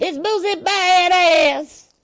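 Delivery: very high, loud squeal, "badass" drawn way out. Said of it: "his voice be getting all high pitched".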